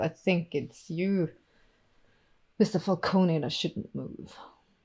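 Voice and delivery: put-on faint touch of a Russian accent. A woman's voice warns a gunman not to move, slight Russian accent. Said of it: "it's a slight Russian accent though".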